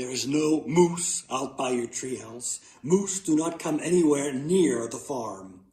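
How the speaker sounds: plain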